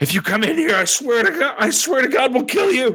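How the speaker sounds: very high, shrill, shouted yell. Voicing a woman behind a bar threatening intruders: shouting a threat. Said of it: "she shouts".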